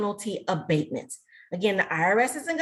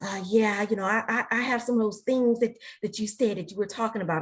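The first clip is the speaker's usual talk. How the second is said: hushed secretive whisper. Retelling what a man said after a talk: imitating a hushed voice. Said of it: "said in a real hushed voice".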